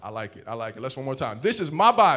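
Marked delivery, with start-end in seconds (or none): 1.4-2.2 very loud, high voice full of attitude. A speaker leads listeners to repeat a declaration after them, with attitude. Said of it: "repeat after me with some attitude".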